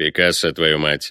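barked, low. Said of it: "рявкнул вдруг заяц низким голосом".

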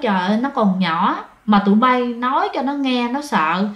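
ordinary delivery

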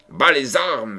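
abrupt, threatening, menacing cry. A voice suddenly cries out as Cœur d'Or rushes into the room; menacing cry. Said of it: "s'écria tout à coup une voix menaçante".

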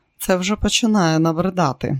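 ordinary delivery

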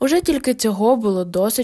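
plain

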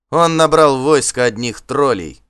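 contemptuous shout. Reading Asfald answering a rival leader before a battle, a contemptuous shout. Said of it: "презрительно крикнул Асфальд".

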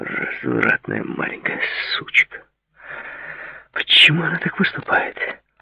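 angry muttering under the breath. David, getting no answer at her door, mutters to himself: muttered under his breath. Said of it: "пробормотал он себе под нос".

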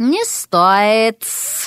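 snake-like hiss through the words. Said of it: "прошипела она".

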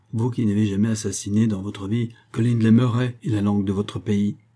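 plain

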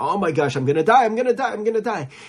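acted frantic, terrified repetition, high and climbing. Retelling a man shaking during a violent storm on a ship: imitating a terrified John Wesley. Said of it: "he's sitting there shaking".

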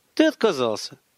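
ordinary delivery

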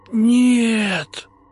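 very high, hoarse, drawn-out pleading wheeze. The rector, as two ghosts float toward him, with a pleading wheeze. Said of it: "умоляюще просипел Вениамин Сергеевич".

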